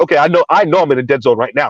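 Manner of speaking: ordinary talk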